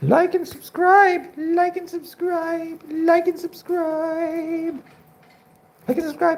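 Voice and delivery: very high-pitched bird voice. Holding the pet bird and voicing it: Pony's voice. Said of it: "Definitely Pony's voice".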